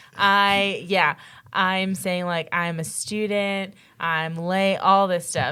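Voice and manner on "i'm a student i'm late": put-on tearful, crying, pleading voice. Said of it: "I am crying".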